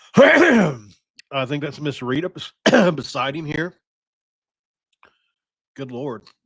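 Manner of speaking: voice breaking with emotion. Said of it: "I choked myself up here".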